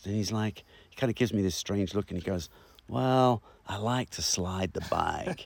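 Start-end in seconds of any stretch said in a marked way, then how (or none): 2.9-5.4 put-on drawn-out clumsy Kentucky accent. Retelling a talk with a rider who answered him, bad Kentucky accent. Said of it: "my Kentucky accent sucks".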